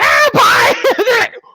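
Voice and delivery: overenthusiastic, shrill, very high, loud, eager yell. Retelling how they greet kids with too much enthusiasm: imitating an overenthusiastic yell. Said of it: "yelling at me".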